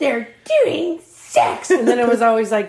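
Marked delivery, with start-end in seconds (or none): 0.0-1.7 dead-serious, fierce, very intense high-pitched voice. Recalling the listener's childhood doll games, imitating their intense voice. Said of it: "A very intense voice and look on your face".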